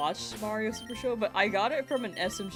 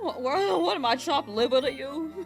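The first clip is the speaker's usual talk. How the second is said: ordinary talk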